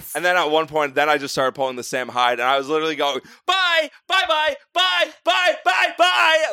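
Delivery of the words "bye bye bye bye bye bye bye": mock, shrill, very high scream, stretched long. Speaker retells screaming at a woman in a bar, retelling screaming in her face. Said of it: "screaming at her in her fucking face".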